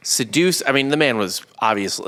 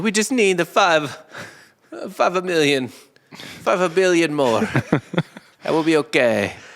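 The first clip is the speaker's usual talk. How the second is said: put-on Italian accent, slow pace, high pitch; 5 semitones higher than usual. Joking about needing billions more, in a put-on italian accent. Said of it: "I can't do a Greek accent, so I'll just do Italian".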